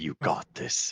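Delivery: soft, steady whisper under the breath. Encouraging a companion in character while guiding his hand: whisper in character. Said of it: "And I'm gonna whisper".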